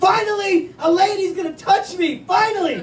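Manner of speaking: high, excited, giddy squeal.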